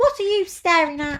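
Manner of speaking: tiny squeaky ladybird voice, very high and loud. A narrator reading a children's story voices the daddy ladybird, squeaky ladybird voice. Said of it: "squeaked the daddy ladybird".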